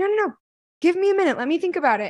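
high excited squeaky voice.

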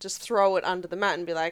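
ordinary delivery

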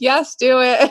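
play-acted emphatic, high, loud screaming. Retelling own reply to new people in Facebook groups: imitating own screaming. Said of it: "And I'm screaming".

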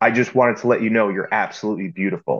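smooth, masculine, confident, self-assured delivery. Showing how to compliment someone like an Andrew Tate type: Andrew Tate-style confident delivery. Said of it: "Confident, smooth as an alpha male, masculine".

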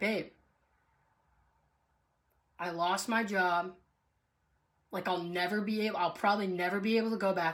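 ordinary talk

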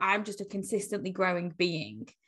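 ordinary talk

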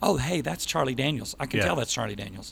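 ordinary delivery

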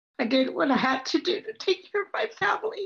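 voice overcome with emotion. A woman tells her life story to an audience, getting emotional. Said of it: "I get emotional when I tell my story".

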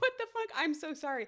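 high, talking through laughter, cracking up. Welcoming listeners to the episode, laughing while talking. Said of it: "I'm laughing right now".

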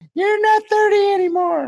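very high, shouted, put-on scolding voice.

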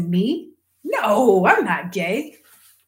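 earnest, acted, very slow, deliberate and drawn out. Retelling denying it to keep a scholarship, retelling most convincing voice. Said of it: "in my most convincing voice".

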